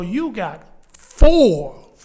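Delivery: very slow, loud, deliberate, drawn out word by word. A coach repeats a point to a player, saying it very slow. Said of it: "Let me say it real slow".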